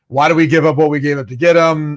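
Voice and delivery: ordinary delivery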